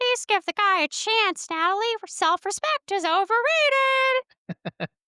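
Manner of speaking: very high, squeaky, cute cartoon monkey voice. Retelling a scene where Ted talks to Natalie, in Ted's monkey voice. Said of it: "Ted in the monkey voice".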